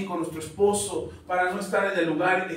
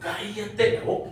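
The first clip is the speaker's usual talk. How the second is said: cross, angry northern Mexican norteño-style tone; 2 semitones higher than usual. Retelling what the Lord told him: imitating an angry northern Mexican tone. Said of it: "con ese tono norteño, porque estaba enojado".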